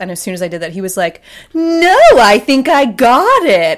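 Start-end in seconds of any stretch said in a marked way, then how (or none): 1.5-3.8 very loud, very slow, bright sing-song tone, stretched out. Retelling Christopher Guest's reply to an offer of help: imitating Christopher Guest's bright voice. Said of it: "he had this, like, very bright voice".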